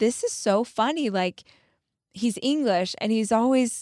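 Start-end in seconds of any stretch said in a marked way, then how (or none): 0.0-1.1 mock delivery through little amused giggles. Retelling her husband's reaction to her embarrassment: imitating a giggling husband. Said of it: "He would giggle".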